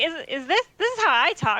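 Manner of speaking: confused, baffled-sounding put-on voice. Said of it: "she's like".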